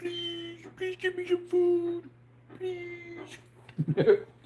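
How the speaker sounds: very high, very slow, pleading dog voice. Voicing the dog that is trying to sneak food: voicing the begging dog. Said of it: "He's like".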